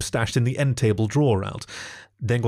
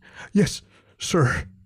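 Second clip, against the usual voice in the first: breathless panting, pitched up; 7 semitones higher than usual. Narrating a story, Alex answers the jackal's question: panting. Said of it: "he panted".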